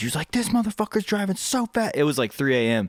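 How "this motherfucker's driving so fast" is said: mock, shrill, very high-pitched yelling. Retelling how a neighbor came up to his friend: imitating a neighbor yelling. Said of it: "yelling and yelling at him".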